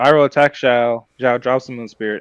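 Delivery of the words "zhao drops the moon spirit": ordinary talk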